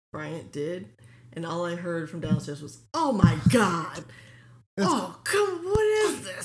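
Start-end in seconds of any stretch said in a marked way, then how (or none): 2.9-6.4 mock yelling, louder, higher pitch, slower. Retelling what someone yelled at the TV from downstairs, imitating someone yelling at TV. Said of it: "he's just yelling at the TV".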